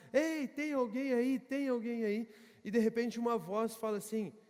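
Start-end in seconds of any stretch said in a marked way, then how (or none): 0.1-2.2 calling out loudly, as if from afar. Retelling a story of a man hanging from a cliff: imitating a man shouting for help. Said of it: "Então ele começa a gritar".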